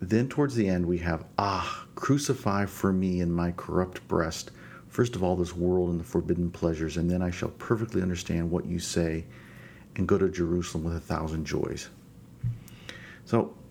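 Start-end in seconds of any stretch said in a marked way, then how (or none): none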